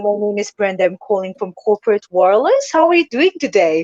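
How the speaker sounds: British-accented, telemarketer-style sales voice. Showing how she greets people on sales calls: UK-sounding sales call voice. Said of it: "You sound like somebody from the U K".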